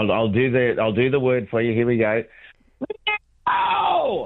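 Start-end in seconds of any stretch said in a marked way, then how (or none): 3.5-4.3 huge, high, record-sized shout.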